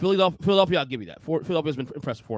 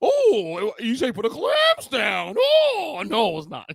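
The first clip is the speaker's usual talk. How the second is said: very slow, stretched-out, swooping high sing-song drawl; 8 semitones higher, 5 dB louder than usual. Showing another speaker a favorite impression: imitating Colin. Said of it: "my favorite Colin impression".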